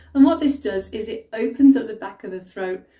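plain

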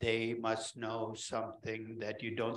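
low, slow, droning, inflectionless monotone. Describing a voice heard in the back of the head while valuing a company; flat monotone voice. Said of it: "Speaks in a monotone".

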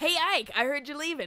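put-on Canadian-sounding accent. Quoting a game character's line to another speaker: Canadian-sounding accent. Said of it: "What, are you Canadian?".

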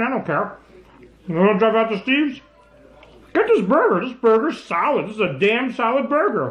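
talking with mouth full. Eating a burger while recommending it, talking with mouth full. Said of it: "My mouth's full while I'm talking".

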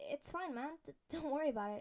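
rattled, flustered. Narrating a story, Peter reassures a boy after an awkward encounter, flustered. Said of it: "Peter replied, flustered from the whole encounter".

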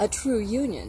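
normal talking voice

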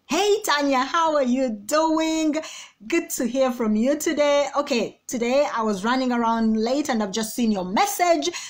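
lively, upbeat, high-energy, energetic chatter. Demonstrating how a voice note greeting to a listener should sound, energetic. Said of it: "A voice note goes with your energy".

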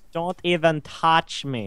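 unplaceable fake foreign accent, possibly Norwegian. Mid-game, a player speaks up in an unidentifiable odd accent. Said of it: "I don't even know what accent that was".

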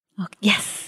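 hushed whispering voice. Answering whether ready for the next round: whispering. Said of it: "Why are we whispering?".

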